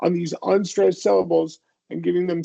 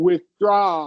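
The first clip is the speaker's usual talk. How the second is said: withdraw stressed on draw, pitch rising. Teaching word stress, saying withdraw with stress on the second syllable. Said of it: "emphasize the second syllable. Your pitch is gonna go up on the second syllable".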